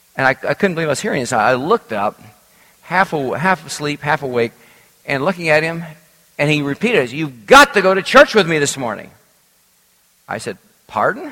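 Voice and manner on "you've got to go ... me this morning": put-on bombastic delivery. Retelling a man repeating his demand out of the blue, in a bombastic voice. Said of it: "he said with a bombastic voice".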